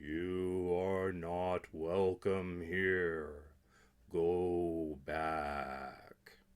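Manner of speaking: deep, very slow, "go" drawn out long. A voice from the shadows warns Calvin away from the castle, deep booming voice. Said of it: "boomed a deep voice from the shadows".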